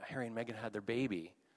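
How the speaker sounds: put-on whisper. Retelling what was said in a waiting room: imitating Melissa whispering. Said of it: "Melissa kind of whispered to me".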